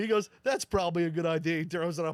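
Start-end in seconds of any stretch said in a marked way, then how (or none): 0.4-1.6 sarcastic, tongue-in-cheek quip. Retelling what the defender said before the dunk: imitating a sarcastic remark. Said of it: "he was being sarcastic".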